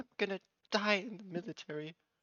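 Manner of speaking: high, whimpering, puppy-dog voice. Voicing a frightened character answering a question: whimpering voice. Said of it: "a whimpering voice of".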